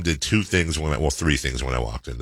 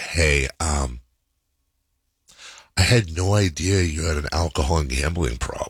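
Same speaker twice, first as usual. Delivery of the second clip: put-on, dead-serious, very solemn tone, delivered slowly. Retelling how mom pulled him aside: imitating mom, super serious. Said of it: "super serious".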